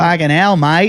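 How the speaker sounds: put-on Australian accent. Taking turns doing accents, showing off a put-on aussie accent. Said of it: "Can I do my Aussie?".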